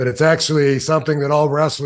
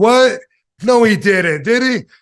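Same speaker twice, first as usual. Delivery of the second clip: high, incredulous, disbelieving yell; 7 semitones higher, 4 dB louder than usual. Telling how you heard someone yelling behind you after your match, retelling a yell. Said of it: "Gorilla Monsoon was yelling like".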